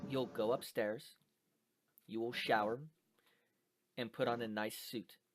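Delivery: low, hushed voice, almost a half-whisper. Narrating a story, the speaker voices a man instructing you: practically a half-whisper. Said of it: "It's practically a whisper".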